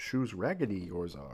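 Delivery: swooping, sing-song, taunting sage voice. Coloring in a drawing of Yoda and speaking as him: Yoda voice. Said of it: "Imagine being bullied by Yoda".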